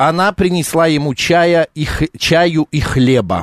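slow, deliberate, dictation-like delivery.

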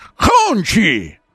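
strained, squeezed-throat exhale. Showing how to say hongqi by squeezing the throat, tight, strained throat. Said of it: "Говорится на выдохе... зажимаешь горло немножечко... как будто тебя душат".

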